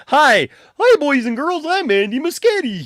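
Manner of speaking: very high, puppet-show style voice. Joking about being mistaken for Andy Muschietti, the speaker introduces himself in a Muppet-like voice. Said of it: "That sounds like a Muppet".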